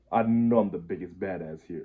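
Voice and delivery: ordinary talk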